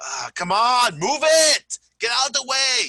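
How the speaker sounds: high, loud, impatient shout. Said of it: "they're so slow and you're like".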